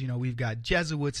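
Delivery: ordinary delivery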